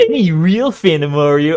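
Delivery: slow, deliberate narrator voice. Repeating a line from the video just heard: imitating the video narrator's voice. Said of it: "I did the voice".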